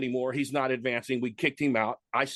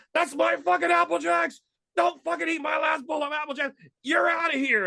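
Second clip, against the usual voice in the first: put-on furious outburst, much higher. Retelling how another guy flipped at the speaker; acting out a furious outburst. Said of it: "And he flipped".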